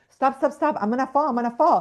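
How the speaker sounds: high, loud yell. Retelling a bouncing horse ride, imitating own yelling to stop. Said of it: "I started yelling at him".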